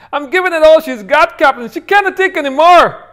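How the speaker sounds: shrill, very high, very loud, bad put-on little car voice. Describing a little voice from the car's center console: bad impression of the car's voice. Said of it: "that's a really bad impression".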